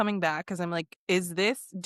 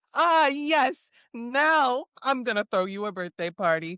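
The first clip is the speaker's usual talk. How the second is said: put-on older man voice, higher pitch; 4 semitones higher, 3 dB louder than usual. Mocking a husband twenty years on, imitating the older husband. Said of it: "he's gonna be like".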